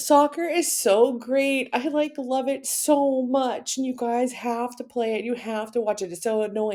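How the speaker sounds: over-the-top gushing excitement, very high-pitched. A teacher shows students what going overboard sounds like: over-the-top enthusiasm. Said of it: "the opposite would be something like this".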